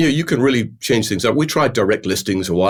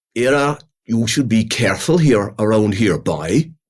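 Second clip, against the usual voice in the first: put-on Cork Irish accent, whispered, much slower. Speaker imagines a bull from Cork leaning over to speak: whispered Irish accent. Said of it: "a good Irish accent".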